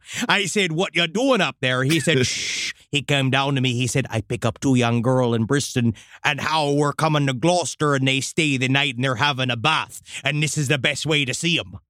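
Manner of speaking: West Country English accent.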